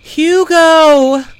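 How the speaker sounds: shrill, high, loud, far-carrying cry. Zelly, surrounded by attacking wolves, calls to hugo: crying out a name. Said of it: "Zelly cried".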